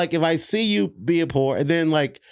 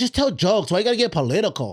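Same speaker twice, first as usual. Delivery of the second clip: put-on Mexican accent; 3 semitones higher than usual. Retelling what a woman yelled last night, in a Mexican accent impression. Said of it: "love your Mexican voice".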